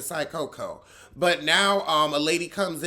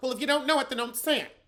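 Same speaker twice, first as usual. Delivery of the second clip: fast, nasal put-on voice, higher; 8 semitones higher than usual. Retelling a reality show argument about cooks and chefs: fast, nasal Bethenny voice. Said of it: "That's my Bethany voice. That was a little fast, a little nasal".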